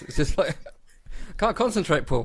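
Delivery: words breaking into laughter. Trying to answer while unable to stop laughing: laughing while talking. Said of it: "I'm actually laughing at Joey dying".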